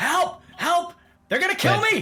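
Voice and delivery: desperate shouting. Voicing a captive being carried back who starts yelling: yelling for help. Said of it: "He just starts yelling".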